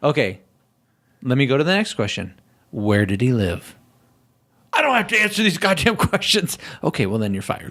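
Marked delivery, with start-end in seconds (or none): 4.7-6.6 high, touchy, defensive, dismissive tone. Acting out how the man answered when pressed with questions, imitating a defensive retort. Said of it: "But he's so defensive".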